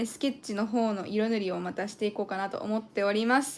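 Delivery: said really fast, rattled off. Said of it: "said it really fast".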